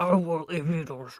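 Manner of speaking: sudden, possessed demon voice. Imitating her mom turning from a phone call to her child, in a demon voice. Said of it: "how did she get a demon voice in there".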